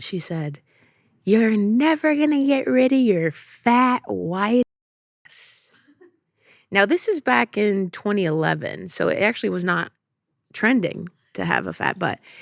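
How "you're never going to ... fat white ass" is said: high, slow mock yell. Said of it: "yelled at me as I was at a stoplight".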